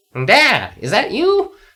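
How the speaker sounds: very high chattering voice. Reading a story aloud, voicing the Skeleman calling to its father: Skeleman's chattering voice. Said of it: "Chattered the Skeleman".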